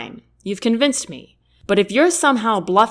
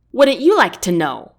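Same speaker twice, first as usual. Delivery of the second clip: fast, snappish, snapped-back delivery; 4 dB louder than usual. Asked by Lester what's in the backpack, the narrator answers: snapping. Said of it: "I snap".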